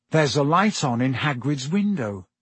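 plain reading voice

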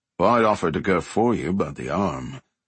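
ordinary delivery, nothing marked

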